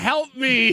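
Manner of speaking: shrill, very high, loud yell. Retelling a partner yelling from the couch: imitating her yelling help me. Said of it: "she's just yelling out".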